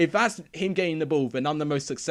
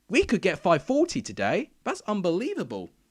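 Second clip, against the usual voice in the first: voice cracking and breaking all over, pitched high; 5 semitones higher than usual. Streamer thanking viewers and new subscribers live, voice cracking. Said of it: "my voice is just cracking all over the place".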